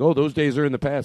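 plain

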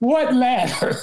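mock hollered, high-pitched yell from a distance. Retelling the thief's reply while running with the ladder: imitating someone yelling back. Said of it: "he yelled back at me".

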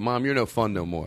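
usual speaking voice

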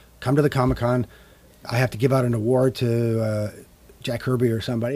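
plain

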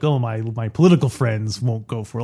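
plain

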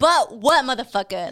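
mock angry, put-on angry delivery.

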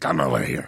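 very deep, low puppet-monster voice. Retelling what the director once said to them: Cookie Monster voice. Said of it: "he spoke like, um, Cookie Monster one day".

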